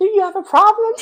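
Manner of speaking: put-on loud, very high voice with light English accent. Retelling confronting people who openly mocked them, in their little English accent. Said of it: "avec mon petit accent anglais".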